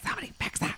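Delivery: soft, unvoiced, pleading whisper. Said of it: "I just laid there being like".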